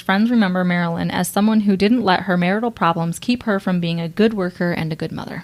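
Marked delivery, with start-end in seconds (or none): none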